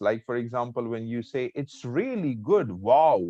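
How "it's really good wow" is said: high, happy, rising then falling tone. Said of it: "when you say all these words, like, you put your emotions".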